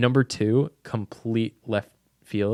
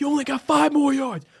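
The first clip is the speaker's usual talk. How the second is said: put-on screaming, pitched higher; 4 dB louder than usual. Retelling a movie scene where the coach urges a player on: imitating a coach screaming. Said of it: "the coach starts screaming at him".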